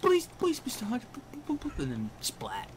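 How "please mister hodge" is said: stammering in a much higher pitch. Imagining Piglet being killed in a game, stammering Piglet voice. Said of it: "He would be all stammering".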